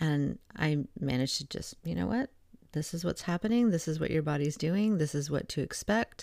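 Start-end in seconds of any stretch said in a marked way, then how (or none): 1.8-6.2 nice, even-tempered, sensible, calm, reassuring voice. Retelling calming down a panicked client on a phone call: imitating own calm rational voice. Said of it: "in a nice, calm, rational voice".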